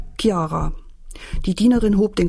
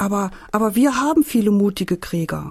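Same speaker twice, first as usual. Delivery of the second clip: usual speaking voice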